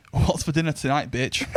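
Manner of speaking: ordinary talk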